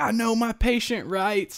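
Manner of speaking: very high, shrill, hollering scream. Retelling fighting nurses in the hospital, quoting themself: retelling own screaming. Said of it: "I was screaming like".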